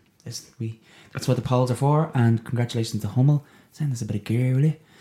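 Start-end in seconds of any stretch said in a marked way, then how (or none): 3.7-4.8 put-on northside Dublin accent. Speaker asks a brand to send the hosts some gear, in a Northside Dublin accent. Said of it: "[name] said that in a Northside Dublin accent".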